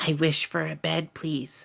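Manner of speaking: whispered, hushed delivery. Voicing a character making a wish into a water orb: whispering. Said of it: "she's going to whisper into it".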